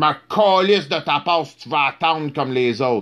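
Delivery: fake French accent on English. Quoting a dude who stops him while cutting through people: put-on French accent. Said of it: "that's me making a French accent".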